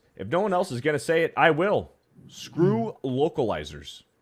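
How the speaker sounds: plain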